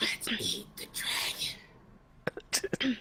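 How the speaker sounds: very slow, breathy, drawn-out whisper. Whispering to Pyro in character: whispering in character. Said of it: "I wanna whisper to Pyro and say".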